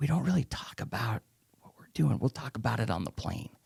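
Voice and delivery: put-on whisper. Retelling what the group's leader said about the trip: imitating someone whispering. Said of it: "he's, like, whispering".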